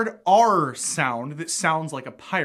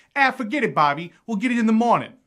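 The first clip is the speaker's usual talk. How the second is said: pitched-up Boston accent, r dropped in morning; 5 semitones higher than usual. Comparing american accents, showing how people in boston would say it: boston accent. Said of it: "up in Boston, they would say".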